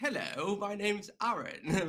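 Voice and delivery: very slow, high put-on old English accent. A Northern Irish speaker recalls his first day on recruitment phones: put-on old English accent. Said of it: "I changed my accent to like old English".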